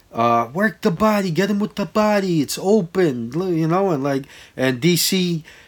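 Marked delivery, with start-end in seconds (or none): 0.2-3.4 put-on yell, much higher. Retelling what he yelled at the TV during a fight, imitating his yelling. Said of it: "I was yelling that the whole time".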